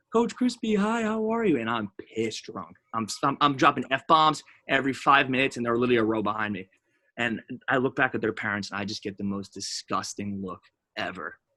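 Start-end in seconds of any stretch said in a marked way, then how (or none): 0.1-1.6 put-on very high, childlike little-kid voice. Retelling young campers greeting their baseball coach, imitating little kids' voices. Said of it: "all 7 and 8-year-olds, come up to me".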